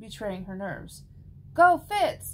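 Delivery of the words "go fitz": very loud, high cheering shout with an edge. Biona calls to her brother Fitz as his match against Sophie begins, shouting. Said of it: "Biona shouted".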